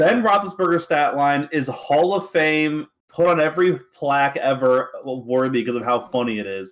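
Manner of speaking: sarcastic, mock-approving tone.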